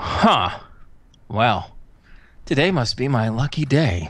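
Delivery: gruff, rough womanly voice. A narrator voices a stranger calling out to the listener, in a gruff feminine voice. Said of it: "you hear a gruff feminine voice ring out".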